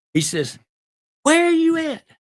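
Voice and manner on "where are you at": shrill, very high, loud screaming. Retelling how a special agent called you on the phone, imitating someone screaming. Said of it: "He's screaming".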